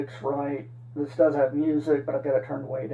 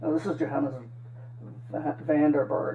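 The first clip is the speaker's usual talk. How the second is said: plain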